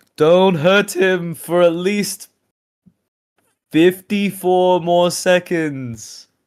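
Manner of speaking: very high, very loud, slow, drawn-out yell. Voicing a character yelling back at attackers: in-character yell. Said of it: "Sparkalonius yells back".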